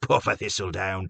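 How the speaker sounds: plain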